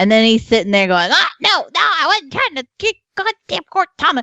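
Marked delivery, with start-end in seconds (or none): 1.1-4.2 very high, terrible, put-on Cajun accent. Retelling a friend's frustration at a game console: imitating a friend's bad Cajun accent. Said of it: "has the worst Cajun accent in the world".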